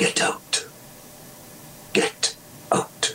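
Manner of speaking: breathy, hushed whisper, slow and drawn out. Retelling his own line at the Swansea Grand on opening night, retelling a whisper. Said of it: "And when I whispered".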